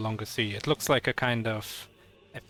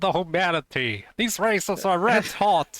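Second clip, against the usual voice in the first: put-on old-time radio announcer voice, much higher and louder; 8 semitones higher, 6 dB louder than usual. Joking about a Hindenburg theme for the show, in a radio announcer voice. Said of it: "that like the radio announcer voice".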